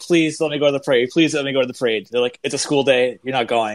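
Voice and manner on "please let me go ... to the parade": mock, pleading, begging delivery. Retelling begging their parents as a middle schooler, imitating own childhood begging. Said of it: "I begged my parents".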